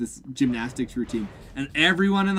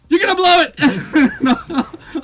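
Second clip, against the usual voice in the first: very high, very slow, shrill, loud cartoon old man shout; 14 semitones higher, 9 dB louder than usual. Retelling a cartoon scene where Grandpa yells at his son: imitating Abe Simpson shouting. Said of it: "Grandpa shouts out".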